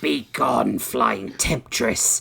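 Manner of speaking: rough, creaky hiss through the teeth. A narrator reads a character's line, hissing. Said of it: "he hissed through his sharpened teeth".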